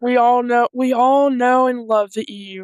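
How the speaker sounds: dry, ironic, tongue-in-cheek, sarcastic fondness. Talking about the eu making new rules again: sarcastic. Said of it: "I'm being sarcastic".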